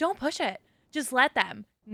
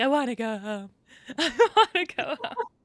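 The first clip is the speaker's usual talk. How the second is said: mock crying, tearful, very slowly drawn out. Retelling a moment from a past argument: imitating own past crying. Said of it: "There was a moment where I was crying".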